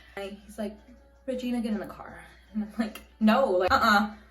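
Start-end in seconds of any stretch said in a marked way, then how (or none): 1.3-2.3 calm, soft, unbothered voice. Retelling how a man pulled up next to her, imitating a calm voice. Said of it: "so calm".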